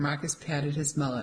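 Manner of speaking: ordinary delivery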